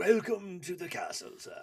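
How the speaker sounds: grand regal voice. Welcoming a guest who called the host a king, mock-regal king greeting. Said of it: "I should be like".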